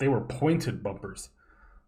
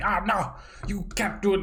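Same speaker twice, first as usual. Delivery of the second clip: mock screaming, voice pitched high; 8 semitones higher than usual. Retelling a bowling alley worker refusing entry: imitating someone screaming. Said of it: "he was screaming at me".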